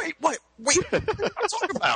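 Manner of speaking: high, fast, panicked squeal.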